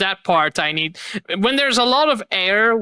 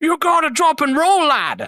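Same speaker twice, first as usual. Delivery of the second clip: put-on Irish accent, pitched up; 9 semitones higher than usual. Quoting a game character's line about its voice acting, in an irish accent. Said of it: "that Irish accent".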